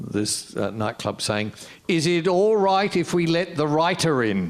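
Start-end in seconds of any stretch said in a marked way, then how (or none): 1.9-4.5 put-on loud Maori-accented shout. Recounting a voice yelling across a nightclub as a door opens: retelling a yell in Maori accent. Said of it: "this Maori voice yelling".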